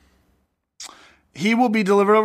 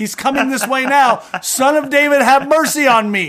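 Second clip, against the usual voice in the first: high, loud, desperate shouting voice. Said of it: "And he goes".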